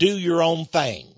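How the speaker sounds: mild put-on Texas twang. Quoting a 60s slogan, with a little texas twang. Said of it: "A little Texas twang there".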